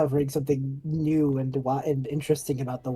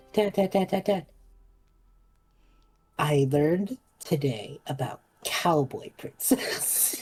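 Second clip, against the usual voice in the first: put-on eager child calling out. Voicing a little girl calling to her dad at a reunion: voicing an excited little girl. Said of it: "you hear her go".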